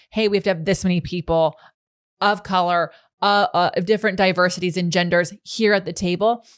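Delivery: ordinary delivery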